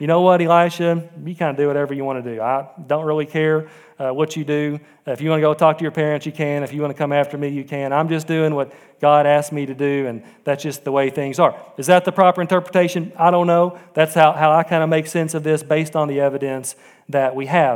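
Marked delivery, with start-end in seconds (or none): none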